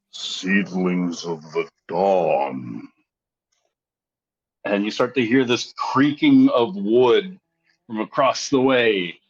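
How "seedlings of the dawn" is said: very low, slow rumbling tone, "dawn" drawn out. A game master voices a treant calling out to the players, deep, slow, rumbling voice. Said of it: "in this slow, rumbling tone, almost like shifting of timber".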